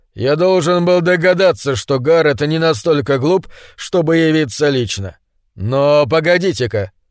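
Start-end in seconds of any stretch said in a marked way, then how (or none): none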